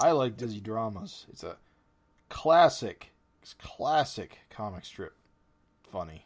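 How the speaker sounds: slow, dry, mocking sarcastic tone. Praising a comic strip to the others: sarcastic. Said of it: "Are you being sarcastic?".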